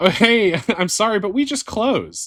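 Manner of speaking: put-on very high-pitched, snickering, laughing voice. Retelling a drive-thru worker's closing announcement: imitating a worker laughing. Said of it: "the guy's laughing at me".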